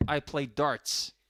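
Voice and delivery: American-style pronunciation. Retelling being asked 'you do what?', answering in an American accent. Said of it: "So I had to say it in American".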